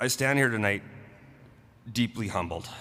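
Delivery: weepy, tearful voice, crying through the words. Reading a prepared speech aloud, crying while talking. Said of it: "there it goes again".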